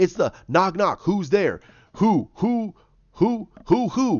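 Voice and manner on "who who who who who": slow hooting like an owl. Telling a knock-knock joke, answering who's there: owl hooting voice. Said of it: "Stop talking like an owl".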